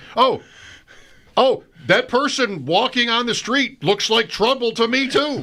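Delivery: very high-pitched, sarcastic pet-talk tone. Retelling talking to a barking dog: sarcastic dog owner voice. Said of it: "I mean".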